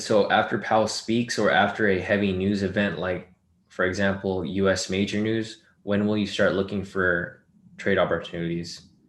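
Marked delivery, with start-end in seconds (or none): none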